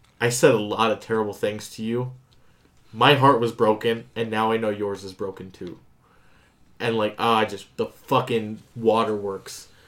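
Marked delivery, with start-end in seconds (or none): none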